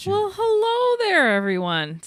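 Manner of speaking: bright, peppy, very high and swooping. Speaker trying to pep up a greeting, peppy, upbeat delivery. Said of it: "See, I'm trying to pep it up".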